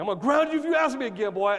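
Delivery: acting really mean. A parent describing threatening a child who keeps asking: mock-mean parent. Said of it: "you just be like really mean".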